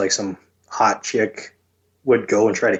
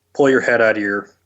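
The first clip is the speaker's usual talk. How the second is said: normal talking voice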